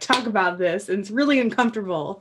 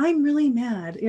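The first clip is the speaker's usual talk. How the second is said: calm, gentle, mild delivery; 3 semitones higher than usual. Explaining how tone of voice changes meaning, soft voice. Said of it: "[soft voice]".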